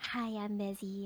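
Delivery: low, sultry, seductive voice. Imitating the other speaker's voice: imitating a sultry voice. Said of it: "you just have this sultry voice".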